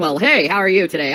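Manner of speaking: deep, self-important put-on announcer voice. Mocking a channel's fake announcer videos, the speaker does a fake announcer voice. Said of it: "put on a fake voice".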